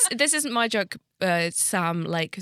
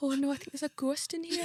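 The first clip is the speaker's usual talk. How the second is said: put-on Geordie accent, higher and quieter; 8 semitones higher, 6 dB quieter than usual.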